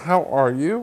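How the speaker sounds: ordinary talk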